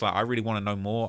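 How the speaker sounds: ordinary delivery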